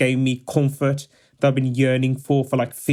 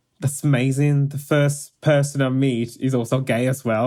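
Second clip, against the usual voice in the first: ordinary delivery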